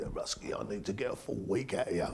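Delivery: put-on very quiet, soft, broad Scottish accent. Retelling what their old boss told them back then, in Robbie Bain's broad Scottish accent. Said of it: "Rabbi brought Scott, as you know, in his accent".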